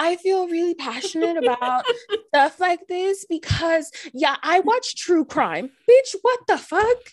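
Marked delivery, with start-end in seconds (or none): 0.0-5.7 exaggerated, caricatured put-on woman voice.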